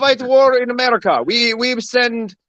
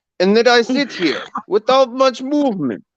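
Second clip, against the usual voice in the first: put-on Russian accent, mouth barely moving. Doing an accent for the other speaker: put-on Russian accent. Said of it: "it's Russian".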